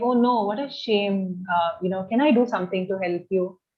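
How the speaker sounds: sympathetic, caring, empathetic tone. Showing the tone when feeling bad for a friend, sympathetic. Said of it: "you have empathy for them. So you're like".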